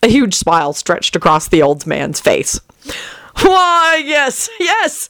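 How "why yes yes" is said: very high-pitched, gleeful, ecstatic cackling. The old man, told he will be famous, answers with an ecstatic cackle. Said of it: "he cackled ecstatically".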